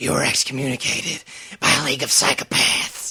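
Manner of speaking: loud, strained voice, as if being strangled. Quoting a movie scene where the hero is being choked: Batman voice while being choked. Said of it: "Batman's like".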